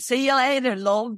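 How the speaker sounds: imitation Liverpool accent. Retelling how fans in Louisiana tried to talk: put-on Scouse accent. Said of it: "we were trying to speak Scouse".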